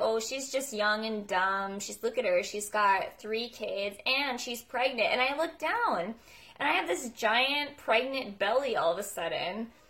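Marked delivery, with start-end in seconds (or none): none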